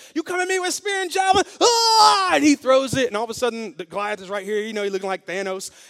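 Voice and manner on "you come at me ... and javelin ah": very high, crazy, frenzied, passionate yell. Speaker retells a fighter challenging Goliath, retelling crazy passionate screaming. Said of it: "somebody who's just crazy passionate".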